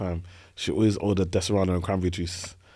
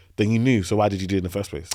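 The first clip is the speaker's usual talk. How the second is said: ordinary talk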